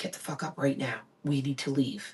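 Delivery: soft, low whisper. Retelling waking someone in a silent house: imitating own past whisper. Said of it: "I'm whispering".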